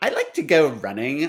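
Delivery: put-on Southern California Valley Girl accent. Answering a prompt to speak in a Valley Girl voice. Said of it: "but in a Valley Girl voice?".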